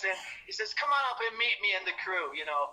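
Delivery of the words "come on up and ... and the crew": put-on easy, inviting, welcoming British accent. Retelling a manager's phone invitation to meet him: Don Arden's British accent. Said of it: "in his British accent".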